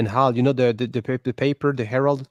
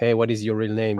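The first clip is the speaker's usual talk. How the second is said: normal talking voice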